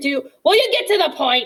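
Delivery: high-pitched, exasperated screech. Narrating a story, a character cuts off a stammering petition; Mister Ocox's exasperated screech. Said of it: "Mister Ocox screeched screeched in exasperation".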